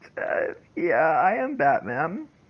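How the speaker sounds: unsure, hesitant and very slow, drawn out. Asked whether they are Batman, answering in a hesitant way. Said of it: "You sounded very hesitant with that".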